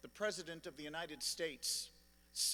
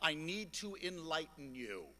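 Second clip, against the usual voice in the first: usual speaking voice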